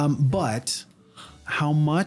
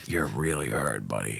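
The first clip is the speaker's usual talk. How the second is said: very low, soft, hushed half-whisper; 6 dB quieter than usual. Player half-whispering to their hurt Pokemon Pyroweb, half-whispering. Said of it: "I whisper to Pyroweb".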